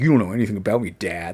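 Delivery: quiet muttering under his breath. Retelling a comic where Ultron talks back to his dad: muttering under his breath. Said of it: "under his breath".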